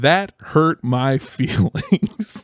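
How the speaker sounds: words breaking up with laughter throughout. Asking for advice about a relationship, laughing while speaking. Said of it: "I'm sorry that I'm laughing".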